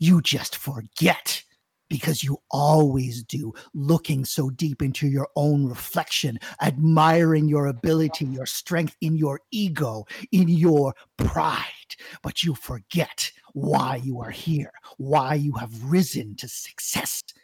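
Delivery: deep, dark, powerful, commanding voice. Voicing a being that speaks to a sorcerer: deep, dark, powerful voice. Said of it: "this deep, dark, and powerful voice".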